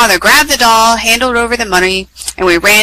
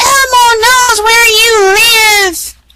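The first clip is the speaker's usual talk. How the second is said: shrill, very high-pitched scream; 13 semitones higher, 3 dB louder than usual. Reading a story, the puppet Elmo screams at viewers through the TV: shrill Elmo scream. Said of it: "In a shrill voice he screamed".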